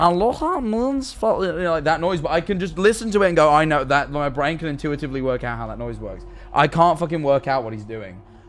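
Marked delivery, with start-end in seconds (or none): 0.0-1.4 very high, strange, unnatural cartoon voice. Explaining how they copy voices, the speaker demonstrates a Stitch voice. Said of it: "Like the voice actor did Stitch".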